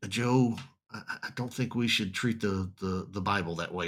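very soft, calm, quiet reproving tone. Retelling a professor's rebuke of a student's joke: imitating Brother Elkins speaking very softly. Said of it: "very softly, very quietly".

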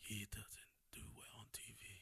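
very quiet, whispered under the breath. Doing an impression of Harrison Ford: Harrison Ford impression. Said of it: "that's how he talks".

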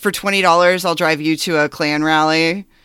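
plain

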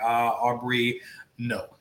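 normal talking voice

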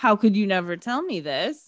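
put-on angry voice. Retelling the film scene where Kay is pissed: imitating Kay angry. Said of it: "Kay is pissed".

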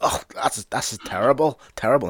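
high-pitched complaining. Voicing a dwarf eating elvish food he secretly likes: complaining. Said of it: "he'll be complaining, going like".

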